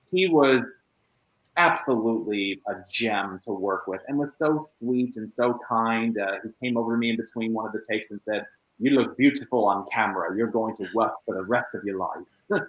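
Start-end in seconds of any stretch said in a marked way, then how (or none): 8.7-12.6 put-on best-effort British accent. Actor quoting a co-star's words between takes, in a British accent. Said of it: "Doing my best British accent there".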